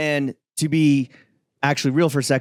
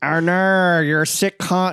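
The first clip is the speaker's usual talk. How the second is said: put-on villain voice; 6 semitones higher than usual. While trying out accents for the show, deliver the line in a Doctor Evil voice. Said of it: "that's Doctor Evil".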